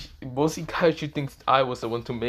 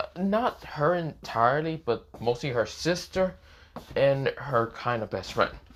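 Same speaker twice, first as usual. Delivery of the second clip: ordinary talk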